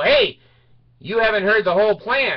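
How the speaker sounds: mock hollering. Retelling how a figure called him back: imitating someone yelling. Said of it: "he starts yelling at me and go".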